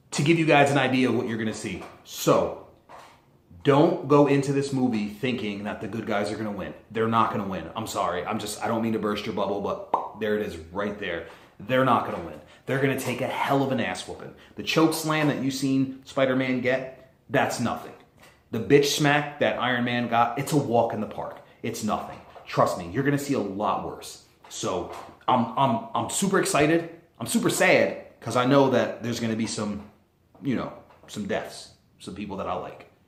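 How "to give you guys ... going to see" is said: rattled off fast. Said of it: "I'm talking fast".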